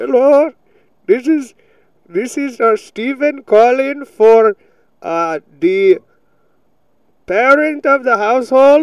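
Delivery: put-on Indian accent. Imitating a Belarusian telecaller who was taught it in school, in an Indian accent. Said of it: "they teach all their children an Indian accent".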